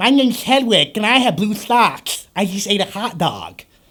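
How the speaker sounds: put-on ten-year-old boy voice with lisp. Describing an actor's many roles, the speaker acts one out: Hedwig, little boy with a lisp. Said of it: "a 10-year-old little boy with a lisp".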